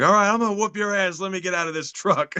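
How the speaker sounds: worked-up, pissed-off outburst. Retelling a movie scene where a character gets pissed off: imitating someone getting pissed off. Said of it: "getting all pissed off, like".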